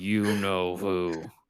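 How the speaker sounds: jaw locked, words pushed through clenched teeth. Answering who is meant, in character: through closed teeth. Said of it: "With his teeth closed".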